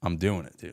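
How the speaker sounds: put-on confident tone. Retelling answering friends at a bar who said no: imitating own confident reply.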